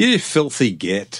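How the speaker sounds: fake, mock Scottish accent. Showing how people in Liverpool talk, a put-on Scottish-sounding accent. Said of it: "That sounded Scottish".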